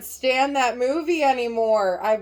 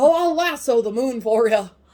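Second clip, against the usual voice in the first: classic leading-man voice, horsey and whinnying; 4 dB louder than usual. Quoting Jimmy Stewart offering the moon: Jimmy Stewart impression, sounds like a horse. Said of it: "He sounds like a horse".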